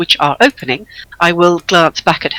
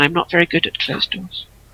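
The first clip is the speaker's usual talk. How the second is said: muttered under breath to oneself, quieter; 2 semitones lower, 9 dB quieter than usual. Speaking in character about a closed door: muttered under breath. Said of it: "But that is under my breath".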